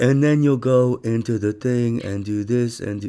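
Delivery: level, flat, matter-of-fact monotone drone. Retelling how a very serious woman gave instructions: imitating a monotone voice. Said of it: "she had a very, like, monotone voice".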